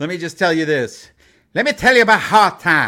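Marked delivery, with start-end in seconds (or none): 1.5-2.9 very loud, booming voice at full volume. Doing a wrestling promo impression: Dusty Rhodes voice. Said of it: "that's my Dusty Rhodes right there".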